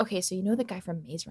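close, hushed, soft half-whisper. Retelling what the person with her half-whispered while getting coffee, retelling a half-whisper. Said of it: "she looks at me and whispers".

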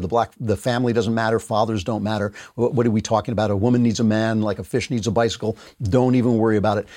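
plain

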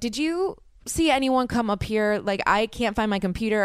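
crying, panicked, tearful voice. Retelling asking a neighbor about the computer, imitating herself crying. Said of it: "crying, mind you".

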